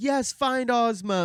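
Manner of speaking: imitated cheering crowd. Retelling the crowd cheering the procession out of the city: crowd screaming. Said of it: "They're screaming".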